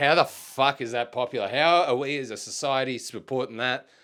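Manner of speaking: plain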